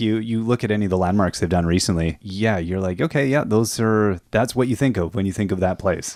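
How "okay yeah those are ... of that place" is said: ordinary talk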